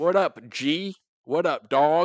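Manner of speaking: mock terrible put-on American accent. Imitating people from other countries trying american slang: imitating a terrible put-on american accent. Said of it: "very terrible".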